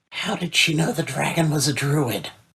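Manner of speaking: leaning-in, confiding half-whisper. Leaning over to ask Thid a question in character: half-whispering in character. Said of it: "I lean over and whisper to Thid".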